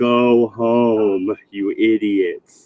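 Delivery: put-on police loudspeaker voice, very slow, drawn out. Telling a story about being caught drunk, imitating a cop on a loudspeaker. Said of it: "goes on the lo- loudspeaker and goes".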